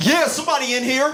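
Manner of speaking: mock would-be tough yell. Retelling a burglar yelling from the toilet: imitating someone yelling out tough. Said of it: "he yells out".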